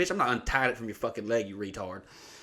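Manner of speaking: acted furious, angry snap. Retelling what she snapped at a friend while fishing, retelling a furious snap. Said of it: "I'm fucking pissed".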